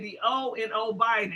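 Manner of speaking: ordinary talk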